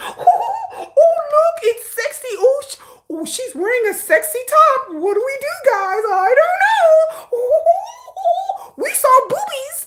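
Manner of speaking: put-on high, slow giggling like silly little boys. Speaker complaining about K-pop men, imitating grown men giggling. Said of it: "grown men giggling like little boys".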